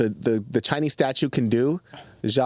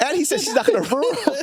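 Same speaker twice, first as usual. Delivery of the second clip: voice pushed very high, squeaky. Telling the others what he says, in a high-pitched voice. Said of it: "Your voice is so high on that".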